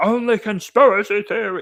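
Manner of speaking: shrill, high-pitched, loud shout. Retelling how a teacher shouted back at them: imitating Mister Reed shouting. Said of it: "He just shouted at me and said".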